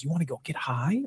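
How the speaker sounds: very soft, hushed, eager and excited. Describing a film scene, quoting a character's line, imitating a character all excited. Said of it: "she's all excited".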